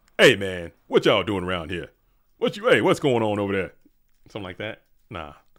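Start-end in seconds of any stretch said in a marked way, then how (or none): 0.2-3.7 very loud, booming, swooping seventies beat cop voice. Trying out a voice like a seventies beat cop from Shaft. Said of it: "seventies beat cop from like a from Shaft".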